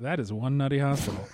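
dry deadpan delivery. Quoting a line from the movie's ending: dry Murray delivery.

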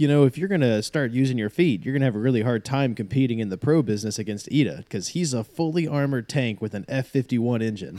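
plain

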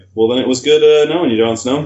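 normal talking voice

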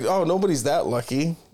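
ordinary delivery

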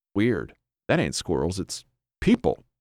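ordinary delivery

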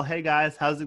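put-on very casual, laid-back voice. Retelling how E.B. walks in and greets everyone: imitating E.B. sounding very casual. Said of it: "he walks in very casual".

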